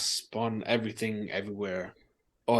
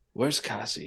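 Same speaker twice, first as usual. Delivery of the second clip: small, little voice, pitched slightly lower. Retelling how he asks where cassie is, in a little voice a bit lower. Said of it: "he says this little voice a little bit lower this time".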